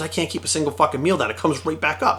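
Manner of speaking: plain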